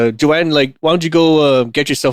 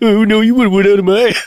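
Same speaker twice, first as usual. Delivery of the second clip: really stupid childish mocking voice, much higher pitch; 8 semitones higher, 3 dB louder than usual. Showing the childish way of repeating what someone says, really stupid mocking voice. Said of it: "repeat what they say in like this this really stupid voice".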